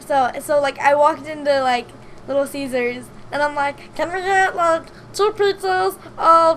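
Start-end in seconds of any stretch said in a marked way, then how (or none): 3.9-6.6 put-on drunken-sounding voice. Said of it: "I used my drunk Mickey voice".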